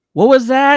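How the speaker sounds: shrill, very high, loud, acted feigned mishearing. Retelling a concert moment, pretending not to hear a man behind: imitating pretending not to hear. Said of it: "pretending not to hear him".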